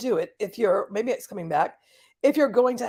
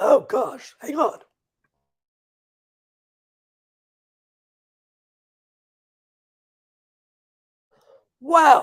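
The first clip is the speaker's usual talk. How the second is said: slow, strained voice recovering from choking; 3 semitones higher, 4 dB louder than usual. Recovering after water went down the wrong pipe: recovering from choking on water. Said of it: "Went down the wrong pipe".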